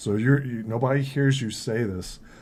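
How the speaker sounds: plain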